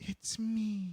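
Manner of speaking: soft, hushed, slightly high voice under the breath. Retelling what he said in the story, imitating a hushed voice. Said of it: "he like said it in like a hushed voice".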